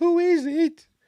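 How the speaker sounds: very high-pitched, light little voice. Retelling the huntsman answering a knock on the door: imitating a light voice. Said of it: "a light voice".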